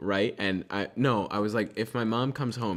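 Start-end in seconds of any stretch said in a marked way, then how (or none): none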